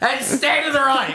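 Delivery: put-on shrill, very high, loud called-out shout. Retelling a brother calling out at a wedding: imitating a brother shouting. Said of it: "I hear my brother shout out".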